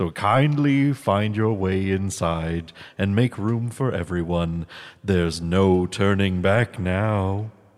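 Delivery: cheesy put-on ghost narrator voice. Opening the podcast as the ghost host: cheesy Ghost Host impression. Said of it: "cheesy impressions".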